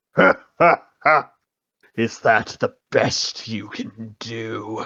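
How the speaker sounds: scornful, taunting "ha ha ha" laugh. Narrator reading the enemy's reply after the hero's sword strike: mocking laugh and voice. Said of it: "in a mocking voice".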